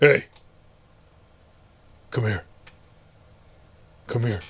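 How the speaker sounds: put-on low, creepy old man voice. Retelling an old veteran calling kids into his garage: imitating a creepy old guy. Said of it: "there'd be a creepy old guy in the garage".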